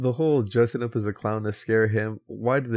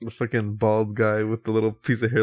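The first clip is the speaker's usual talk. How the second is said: plain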